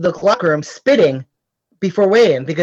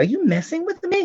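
very high, hushed half-whisper; 10 semitones higher, 5 dB quieter than usual. Retelling a wrestling partner's words during a match: imitating someone half-whispering. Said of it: "He whispers to me".

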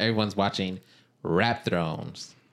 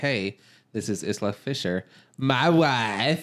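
slow comic delivery, wife stretched out; 3 semitones higher than usual. Imitating a husband introducing his wife at a party: Borat voice. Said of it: "'cause he did that in Borat".

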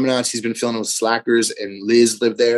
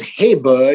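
loud, loose, laid-back dude voice; 3 semitones higher, 5 dB louder than usual. Retelling how a friend greeted the speaker with a smirk, Spicoli voice. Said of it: "like kind of like Spicoli".

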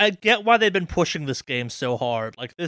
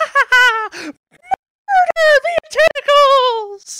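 very high, loud, slow cartoon mouse cackle. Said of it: "Every time you say it like that".

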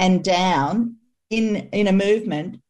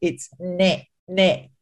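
nasal pinched-nose voice, slower. Demonstrating how an N sound can sound, pinched-nose nasal voice. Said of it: "like if I pinch my nose and say it".

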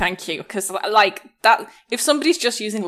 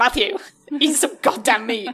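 put-on scolding mother voice, higher pitch; 4 semitones higher than usual. Imagining a boyfriend's mom on the phone: imitating his mom scolding. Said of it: "his mom getting on the phone and being like".

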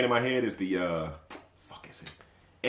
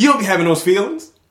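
mock sassy delivery, loud and high; 8 semitones higher, 10 dB louder than usual. Retelling what a friend said this week: imitating a sassy delivery.

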